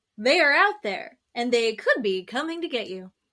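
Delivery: broadcast TV announcer delivery. Speaker recalling an 80s show's intro clip, imitating the show's announcer. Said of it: "and there's the announcer".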